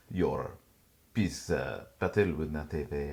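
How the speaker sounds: put-on French accent slipping in. Trying to keep a character's Spanish accent: put-on French accent. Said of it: "I keep going French again".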